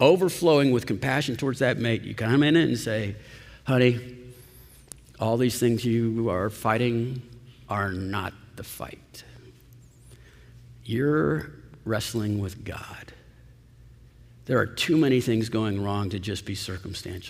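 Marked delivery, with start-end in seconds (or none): 3.6-13.1 soft and kind, quieter, slower. A minister shows how to speak to your mate, in a soft, kind voice. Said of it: "in a soft voice and a kind heart".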